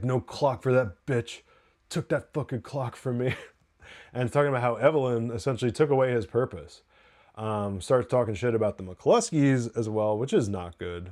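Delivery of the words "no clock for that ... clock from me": put-on, slurred, drunken-sounding speech. Retelling what Ian said while drunk, imitating Ian's drunk slurring. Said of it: "talking shit and and slurring".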